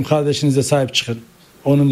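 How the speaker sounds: ordinary talk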